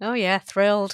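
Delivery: flat, dry, sarcastic deadpan. Told by the other speaker they'll be pleased, replying with sarcastic deadpan. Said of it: "Can't you hear it in my voice?".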